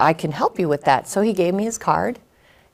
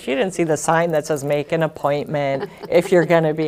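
plain

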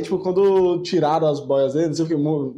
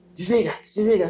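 high, squeaky, put-on little child voice; 5 semitones higher than usual. Describing ET Bilu's sessions, speaker mimics the voice ordering lights off: ET Bilu child voice. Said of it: "uma voz de criança".

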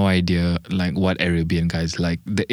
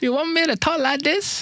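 very high put-on Chinese accent. On a podcast episode, a co-host joins the joke, speaking in a Chinese accent. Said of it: "if I had a Chinese accent".

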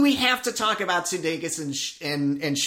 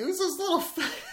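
very high, giggling, laughing mock voice. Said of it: "he's like".

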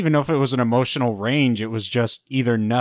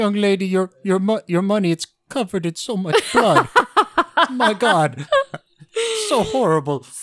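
put-on Indian accent drifting off Indian; 9 semitones higher, 3 dB louder than usual. Retelling what a worried man would say to her, in an attempted Indian accent. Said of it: "I don't think that's Indian anymore".

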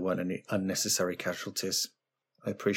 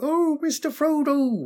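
very high-pitched, loud voice; 8 dB louder than usual. Asked to voice Sam, the speaker shows how it would go: Sam impression. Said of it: "You'd be like".

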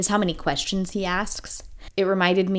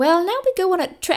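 put-on, very high British accent; 13 semitones higher, 4 dB louder than usual. A co-host asks for a British accent this time; present the storyline in a British accent. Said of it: "Can you be British this time?".

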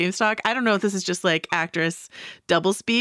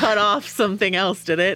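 usual speaking voice

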